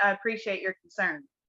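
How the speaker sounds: put-on sarcastic tone. Retelling a show character's reply to another man: imitating Nathan's sarcastic tone. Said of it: "note of sarcasm in Nathan's voice".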